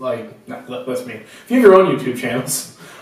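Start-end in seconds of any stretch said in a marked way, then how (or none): 1.5-2.7 condescending, talking-down tone. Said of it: "sounded really condescending".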